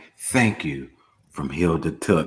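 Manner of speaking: scary, unsettling, frightening delivery. Retelling how mom said a line while holding the knife: imitating a scary delivery. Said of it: "the way she said it was scary too".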